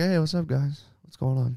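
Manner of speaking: cartoon rabbit voice. Retelling a movie scene where someone eats something: Bugs Bunny voice. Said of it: "Basically doing the Bugs Bunny".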